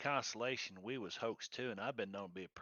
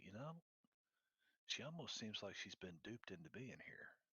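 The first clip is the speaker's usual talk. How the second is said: very quiet, hushed half-whisper; 3 semitones lower, 11 dB quieter than usual. Half-whispering to a companion that she seems duped: half-whispering. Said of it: "I'm gonna whisper to".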